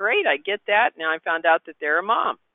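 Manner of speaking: ordinary talk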